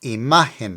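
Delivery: imagen with the ma syllable stressed. Vocabulary lesson on the word meaning image: stress on ma in imagen. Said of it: "Pronounce it with the emphasis on the M A".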